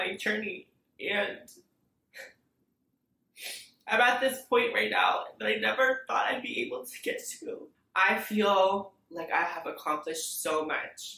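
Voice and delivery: tearful, crying while talking. Talking about a personal journey while crying: crying while talking. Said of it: "I'm crying so much and I feel so emotional".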